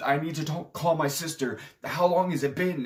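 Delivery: high-pitched, panicked, blurted freaking out. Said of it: "Norm starts freaking out".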